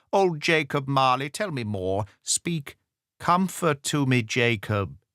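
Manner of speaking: quavering, trembling, begging and imploring tone. Narrator reading a kneeling man's plea to a ghost: Scrooge pleading imploringly. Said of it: "[name] fell upon his knees, and clasped his hands before his face. "Mercy!" he said. "Dreadful apparition! Why do you trouble me?" / said [name]. / trembling. ... he said imploringly".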